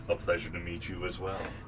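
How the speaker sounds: put-on deep voice. As Cassidy, return a greeting to someone you are meeting, in Cassidy's deepest possible voice. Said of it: "as deep of a voice as he could muster".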